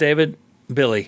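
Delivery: ordinary delivery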